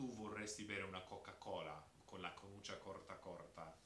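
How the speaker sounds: Tuscan Italian accent, c pronounced as h. Demonstrating the standard local phrase to listeners, in a Tuscan accent with C said as h. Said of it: "Tuscan accent, ... instead of the C's, they'll say ha".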